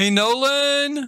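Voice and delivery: very high-pitched, drawn-out, loud yell. Mid-stream, the speaker yells to get his son's attention: yelling. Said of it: "That's my son I'm yelling at".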